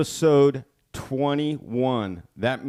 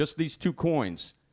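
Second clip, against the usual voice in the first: usual speaking voice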